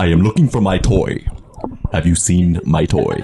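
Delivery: voice dropped low. Voicing a dog looking for its toy: James Earl Jones voice. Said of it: "this is James Earl Jones".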